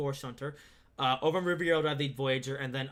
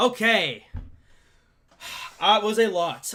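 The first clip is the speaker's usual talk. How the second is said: very loud, out-of-breath, winded outburst; 7 semitones higher, 9 dB louder than usual. Speaker pausing partway through with a lot still left to go, out of breath. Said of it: "I am out of breath".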